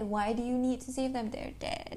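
plain

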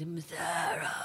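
breathy, whispered horror film killer voice. Recalling the film's last line, imitating the killer's voice. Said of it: "and I love his voice".

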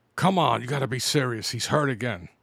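ordinary talk, nothing marked

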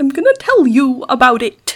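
belted-out singing, swinging into Italian. Playing Christopher Walken turning up in the conversation, use a Christopher Walken voice that turns Italian. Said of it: "When I try to do a Christopher Walken voice".

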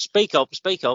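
shouting. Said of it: "The fact that you said shouted".

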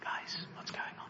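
soft, hushed, breathy, barely voiced whisper. Acting out how Jesus did not enter the mourning room: whispering. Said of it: "So he doesn't whisper".

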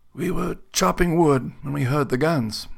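leathery whisper. An old man answers a soldier's question about what happened in the town, in a leathery whisper. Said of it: "His voice a leathery whisper".

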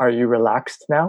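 put-on whisper. Retelling what the judge said into their ear: imitating a whisper. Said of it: "he whispers into my ear".

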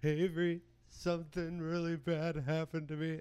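play-acted high, loud crying through the words. Retelling the sister's nine o'clock phone call, imitating her crying. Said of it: "she's like crying".

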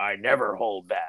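grave, earnest, small serious voice. Telling a friend how he always answers, imitating [name]'s serious voice. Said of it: "in your little serious [name] voice".

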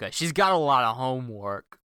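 easing into slight New York accent, loud and swooping. Discussing a character, easing into a new york accent. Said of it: "my new way of easing into a New York accent".

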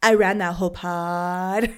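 deliberate, slow, drawn out, "pod" stretched long. Imitating how the other speaker said a line on an earlier episode: imitating the other speaker's tone. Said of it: "your tone, it's like".

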